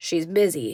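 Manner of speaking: thoroughly bored, offhand, dismissive tone. Reading a story, the man at the desk answers a request to see the superintendent: bored tone. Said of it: "he says in a bored tone".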